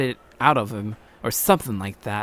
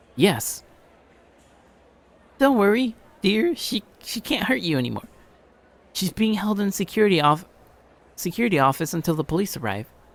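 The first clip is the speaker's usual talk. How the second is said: acted female voice, pitched up; 8 semitones higher than usual. Reading game dialogue aloud, voicing the woman character. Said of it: "talk like the woman and man's voice".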